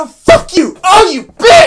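put-on high screaming. Describing how Davin watches wrestling, imitating Davin screaming. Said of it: "She's like screaming at them".

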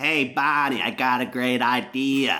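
clumsy, bad, put-on Boston accent. Acting out what Sean said back then, in Sean's Boston accent. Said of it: "It's my Sean Sullivan Boston accent".

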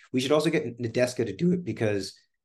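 plain

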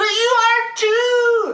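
very high, slow, drawn-out desperate cry. Yuki answers a voice in his head from someone not there; crying out desperately. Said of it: "Yuki cried out desperately".

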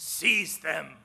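menacing, barked villain voice.

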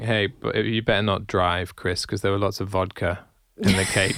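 ordinary delivery

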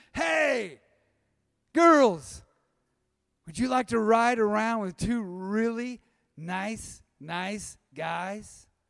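mild, called-out voice, as across a street. Retelling calling out across an intersection to girls in a truck: imitating own past yell. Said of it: "I yell across the intersection".

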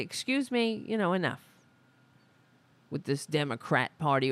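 ordinary talk

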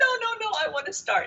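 rushed, high-pitched frantic voice.

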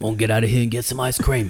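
put-on gruff British movie-style voice. Imitating a handsome man's pickup line, in a Jason Statham voice. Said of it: "I sounded like Jason, Jason Statham".

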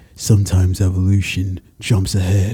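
ordinary delivery

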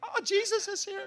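very high, slow, drawn-out, bubbly gush. Imitating a friend who is always bubbly, bubbly Rachel voice. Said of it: "those friends that are always bubbly".

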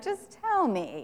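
mock, almost sarcastic, mildly sarcastic delivery. Imagining how Jesus answered two disciples' request: sarcastic Jesus. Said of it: "Sarcastically, almost".

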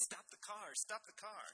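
high-pitched, startled shout. Reading Eastridge's line as he sees the girl pressed against the windshield; yelling.

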